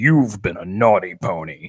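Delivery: big, deep, scary, menacing robot voice. Retelling a story, speaker voices a robot addressing a pony: big scary sentinel robot voice. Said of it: "voice of like a big scary sentinel type robot".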